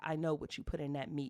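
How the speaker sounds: hushed whisper, very close to the ear. A woman pulls you close by the throat and speaks into your ear, whispering. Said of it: "she whispers into your ear".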